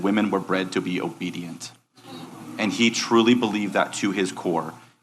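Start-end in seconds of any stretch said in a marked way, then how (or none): 0.0-1.7 imitated deadpan, flat delivery, quieter. Retelling what a convicted offender said in an interview: imitating a deadpan statement.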